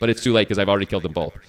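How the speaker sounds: ordinary delivery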